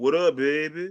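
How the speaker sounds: put-on, fake New Orleans accent. Showing Mike how you need to talk, in a put-on New Orleans accent. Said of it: "I need to talk like I'm from New Orleans".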